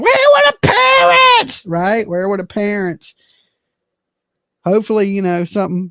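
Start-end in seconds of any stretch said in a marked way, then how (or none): 0.0-1.6 high, swooping put-on woman's voice. Talking about a couple with a big age gap, react in your best Nancy voice. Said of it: "like in my best Nancy voice".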